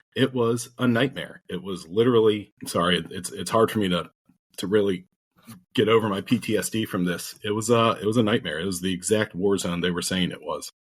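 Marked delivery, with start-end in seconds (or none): none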